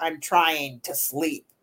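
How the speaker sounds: low, cranky, grouchy, crotchety woman's voice. Retelling what a woman's voice on an EVP recording said, in a crotchety voice. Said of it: "a really crotchety voice like that".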